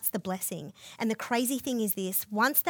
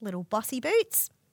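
ordinary talk, nothing marked

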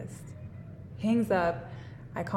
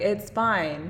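normal talking voice

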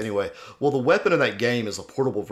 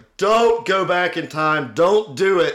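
very high, slow, drawn-out yelling; 9 semitones higher, 7 dB louder than usual. Recalling watching a show, the speaker is retelling yelling at the tv. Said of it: "I yelled at the TV".

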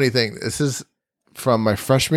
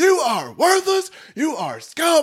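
put-on very high, swooping, barking drill-sergeant yell. Retelling pretending to be a drill sergeant at a guy doing push-ups: retelling a drill sergeant yell. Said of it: "And I was just like".

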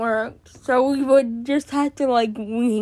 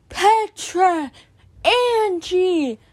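mock, high-pitched shouted call; 7 semitones higher than usual. Retelling how the counselor ran upstairs calling them during the alarm; imitating someone yelling. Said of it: "she's yelling".

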